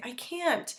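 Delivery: high voice crumbling straight into tears. Retelling a daughter's reply when told to clean: imitating someone breaking down. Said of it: "she'll just instantly just kinda break down and say".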